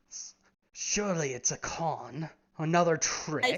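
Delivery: stunned, very slow, halting, stammering words. Voicing a guard facing a talking cat: stunned. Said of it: "They're both still stunned".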